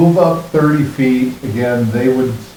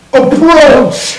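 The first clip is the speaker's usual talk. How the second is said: very high, loud, shrill yelling; 8 dB louder than usual. Game master narrating a tabletop fight as a character is yelling a command. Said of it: "as he yells".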